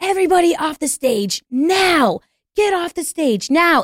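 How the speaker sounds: high, drawn-out screaming. Retelling a radio call heard via a security guard, imitating someone screaming. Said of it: "I just hear her on the radio via the security guard screaming".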